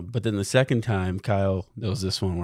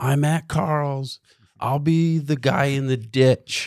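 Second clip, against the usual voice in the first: put-on drunk yelling, higher; 6 semitones higher, 4 dB louder than usual. Retelling a late-night phone call from a ditch: imitating own drunk yelling. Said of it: "he remembers me yelling into my phone".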